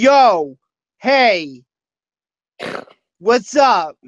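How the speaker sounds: very slow, drawn-out frat bro drawl. Imitating how someone talks, in a put-on frat bro voice. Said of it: "he talks with this weird like frat bro".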